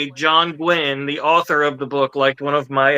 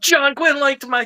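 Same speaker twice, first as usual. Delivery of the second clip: put-on thrilled, elated exclaiming, very high-pitched; 12 semitones higher than usual. Speaker retells her own reaction in that moment; retelling elated speech.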